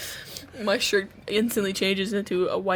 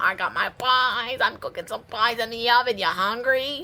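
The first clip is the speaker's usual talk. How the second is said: put-on elderly New York woman voice. Voicing a biscuit in a wig and lipstick: old new york woman voice. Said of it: "you become an old New York woman real easy".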